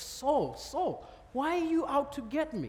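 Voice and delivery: mild, tender, kind and gentle voice. Retelling the Bible story, the speaker imagines God speaking to Saul: gentle voice of God. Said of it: "I imagine he was very gentle with him".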